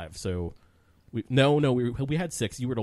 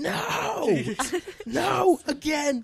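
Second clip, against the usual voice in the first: screaming, higher. Retelling how a friend reacted to opening boxes: imitating someone screaming. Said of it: "he'd be screaming".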